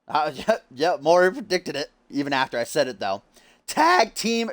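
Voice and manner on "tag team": voice cracking, higher. Announcing next week's tag team match, a presenter speaks with a voice cracking. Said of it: "oh, that voice crack".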